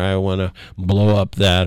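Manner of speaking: usual speaking voice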